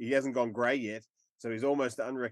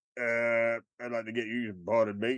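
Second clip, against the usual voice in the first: hesitant parody character voice, like a movie spoof. Quoting a Sling Blade parody of Swingers: Sling Blade voice. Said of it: "the parody of the Sling Blade one".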